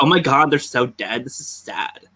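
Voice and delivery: mocking put-on affected way of talking. Imagining someone talking like that at funerals, imitating that put-on way of talking. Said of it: "imagine talking like that at funerals".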